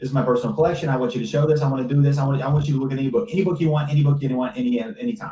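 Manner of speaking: rapid-fire, rattled-off, vendor-style fast-talking patter. Retelling a market vendor showing off his book collection: imitating a fast-talking guy. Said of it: "He was like a fast talking dude".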